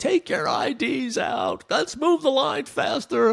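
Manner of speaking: very high, swooping, drawn-out, barked screaming. Retelling a guy screaming orders at people in a security line: retelling a screamed order. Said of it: "this guy is screaming at the top of his lungs".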